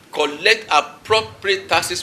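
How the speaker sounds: appropriate stressed slow, deliberate and emphatic. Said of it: "mark my word".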